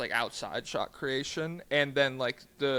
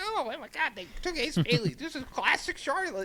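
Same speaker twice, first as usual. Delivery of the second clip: very high-pitched, annoying, griping voice; 12 semitones higher than usual. Mocking annoying Twitter fans complaining about a draft pick: imitating annoying Twitter fans. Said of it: "annoying people on Twitter, they're like".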